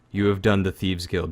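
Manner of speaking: very somber, solemn tone. Voicing a character who takes back a powerful box: very somber. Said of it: "very somber".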